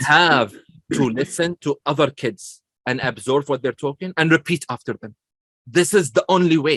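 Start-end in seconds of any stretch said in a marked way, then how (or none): none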